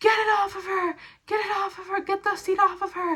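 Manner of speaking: acted, high-pitched, insistent repeated scream. Retelling what a woman's husband screamed when she got hurt, retelling a scream. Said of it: "her husband was like screamed".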